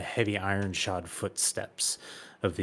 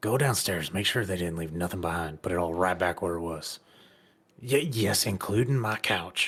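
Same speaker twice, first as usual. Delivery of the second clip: in a whisper. Game master voicing Chetland whispering orders to a worker: Chetland whispering. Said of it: "you hear Chetland whisper to one of the workers".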